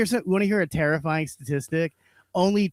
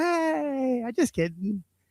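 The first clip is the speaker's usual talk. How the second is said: mock playful, teasing, pitched-up, very slow drawl; 9 semitones higher than usual. Retelling what a performer said on stage after mean jokes: imitating Ahmed saying it with a smile. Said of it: "he would smile. He'd go".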